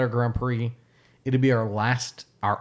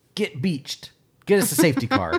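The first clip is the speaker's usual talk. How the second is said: loud, animated, raised voice, pitched up; 7 semitones higher, 4 dB louder than usual. Retelling a reaction while watching the race: imitating own loud call. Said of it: "I loudly".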